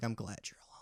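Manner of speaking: whispered, disgusted voice. Imitating a teacher being glad the speaker works alone: imitating a teacher's disgust. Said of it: "She would look at me with disgust and be like".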